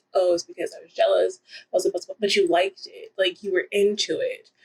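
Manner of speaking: usual speaking voice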